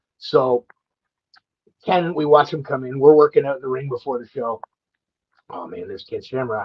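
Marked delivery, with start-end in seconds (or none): 5.5-6.7 imitated mutter, lower and quieter. Retelling seeing a childhood hero arrive, retelling muttering under breath. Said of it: "I say under my breath to Cody".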